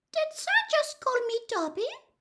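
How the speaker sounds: tiny, trembling, very high squeaky voice. Narrator reads a house elf speaking curiously to Harry, teeny quivering squeak. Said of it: "squeaked the elf curiously ... a teeny, quivering squeak of a voice".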